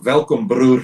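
put-on rolled-r pronunciation. Retelling how Siabelo answers where he is from: imitating Siabelo, stressed rolled r in broer. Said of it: "he says it exactly like that".

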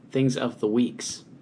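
slow, settled, falling tone.

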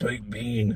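eerie voice sounding like a possessed demon. Speaker retelling a little girl repeating a phrase back: imitating Rose's demon voice. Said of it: "sounded like a fucking demon".

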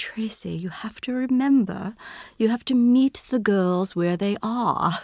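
put-on lovely, refined, beautiful British accent. A teacher quotes advice from the head of the upper school, in a British accent. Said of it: "she had this beautiful British accent".

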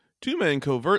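loud voice breaking mid-word. Reading a badly described movie plot for the other to guess, voice cracking. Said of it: "what happened to my voice right there?".

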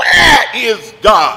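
preacher-style calling out, held back and restrained. Telling a story, a preacher points his finger at a boy, screaming. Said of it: "yelled out and screamed".

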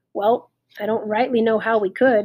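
plain reading voice

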